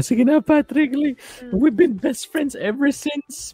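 very high-pitched, earnest pleading tone. Recounting a cartoon flashback where SpongeBob pleads with Patrick, imitating SpongeBob begging. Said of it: "like he was begging".

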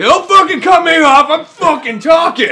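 acted, furious, loud, high-pitched, angry ranting voice. Acting out santa getting angry at a kid: imitating an angry santa. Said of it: "he eventually just gets angry at the kid".

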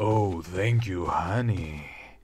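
low, fake, sultry, seductive sexy voice. Player repeats a line the character just said: put-on sexy voice. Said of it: "With my sexy voice".

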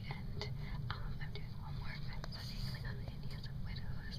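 soft, unvoiced whisper.

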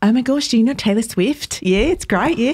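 put-on New Zealand accent. Retelling what people said to the speaker on a New Zealand trip, in a New Zealand accent. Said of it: "That was a great accent".

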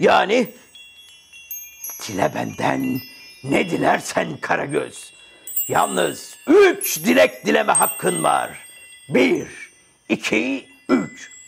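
rough, creaky genie character voice. The lamp's genie, just freed, speaks to Karagöz in a genie of the lamp voice. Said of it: "Ben bu lambanın ciniyim".

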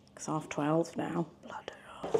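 quiet whispered voice.

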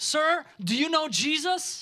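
very loud, very high, stretched, drawn-out booming shout. Retelling an evangelist calling out to a young man: imitating a shout. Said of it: "looked at the young man and shouted".

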